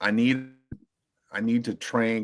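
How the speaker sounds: plain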